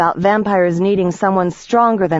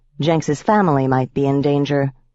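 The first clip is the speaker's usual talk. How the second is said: ordinary delivery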